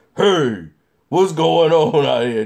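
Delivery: deep, dropped, loud, menacing tough-guy voice. Retelling a film scene with the suit in intimidation mode: imitating Spider-Man's dropped voice. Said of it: "his voice dropped".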